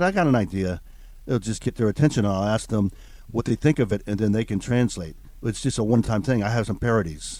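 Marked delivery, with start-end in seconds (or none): none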